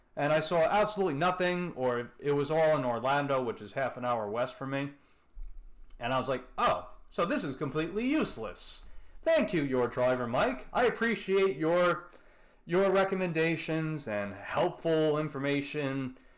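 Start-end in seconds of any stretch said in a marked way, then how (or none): 6.6-16.2 mock, sarcastic, clearly insincere praise. Retelling own past reaction to a useless app: retelling a sarcastic remark. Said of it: "being sarcastic".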